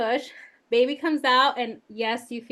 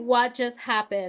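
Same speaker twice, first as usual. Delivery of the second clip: put-on sobbing, slower. Recounting the moment to listeners, retelling her own sobbing. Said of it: "I start immediately sobbing".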